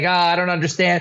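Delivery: tearful, sobbing words through crying. Retelling how a man reacted after money was thrown in his face, imitating someone crying. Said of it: "he's crying".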